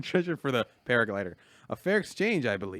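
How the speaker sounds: put-on voice of an elderly man. Reading the next game line as asked: impression of the old man. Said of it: "you wanna hear my impression of the old man?".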